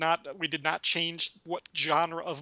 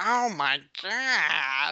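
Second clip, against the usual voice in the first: put-on, heavily slurred speech; 4 dB louder than usual. Quoting a drunk's line from a movie: imitating a drunken slur. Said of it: "this weird slur".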